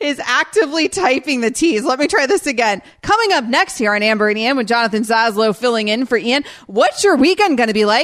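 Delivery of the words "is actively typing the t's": high-pitched giggly talk, laughing through. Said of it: "Why couldn't you get through without laughing?".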